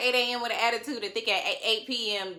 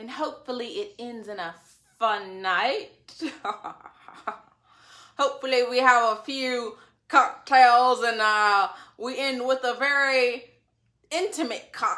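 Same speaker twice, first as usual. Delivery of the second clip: casual put-on British man's accent; 4 dB louder than usual. Recapping a date conversation between spouses, impression of a British guy. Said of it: "that's my impression of a, a British guy".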